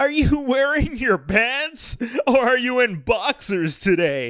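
pompous, self-important interviewer voice, very high, slow.

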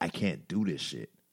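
put-on bawling. Recalling walking around DuPont Circle, retelling own bawling. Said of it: "And I'm walking around DuPont Circle bawling".

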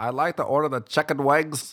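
put-on high, nasal voice of an elderly woman. Imitating an old lady from work ordering food, in a nasal old lady voice. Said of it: "she talks so nasally".

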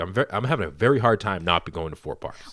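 plain

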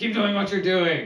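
loud, high half-orc holler. A half-orc answers someone who asked what to do, yelling back. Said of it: "the half-orc yells back".

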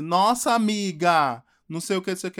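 loud, sarcastic, ironic, teasing mocking tone. Retelling how a friend answered a sad confession: imitating a friend's ironic mocking. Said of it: "começou a me ironizar e começou a falar assim".

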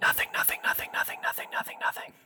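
whispered voice. A co-host whispering to the show's listeners: whispering sweet nothings. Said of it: "We'll whisper sweet nothings".

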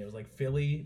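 plain

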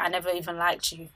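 ordinary talk, nothing marked

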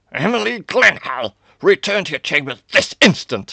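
enraged, booming bellow, very loud and very high. A narrator reads a father ordering his daughter to her chambers, roaring. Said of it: "he roared".

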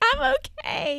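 very high voice through tears, crying. Retelling crying as an allergic child who wanted to keep the dog: imitating own past crying voice. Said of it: "I would be, like, crying".

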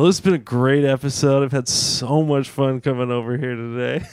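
very slow, ironic, sarcastic delivery. Ending an episode after being asked to get off the phone: sarcastic tone. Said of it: "when you say it sarcastically like that".

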